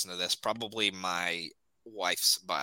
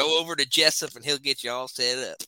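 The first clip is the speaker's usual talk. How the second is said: full-on, laid-on put-on Southern accent, pitched up; 6 semitones higher, 4 dB louder than usual. After another speaker asks for a real Southern voice, performer answers in a real Southern accent. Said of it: "I want him to be real Southern".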